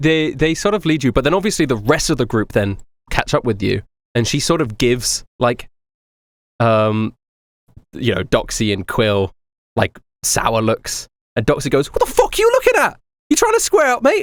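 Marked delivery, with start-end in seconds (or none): 11.9-14.2 very high, loud, irritated, agitated voice. Voicing a character snapping back at sour looks: agitated. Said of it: "She's a little bit agitated".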